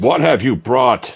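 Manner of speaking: very high, loud, fierce, aggressive angry voice. A character speaks in Orcan, in their most aggressive and angry voice. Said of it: "In my most aggressive and angry voice".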